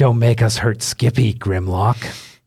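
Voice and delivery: loud, called-out voice. Voicing a hidden voice calling from around the corner: unseen voice calling out. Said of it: "you hear a voice go".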